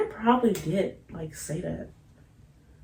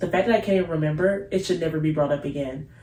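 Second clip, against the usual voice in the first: plain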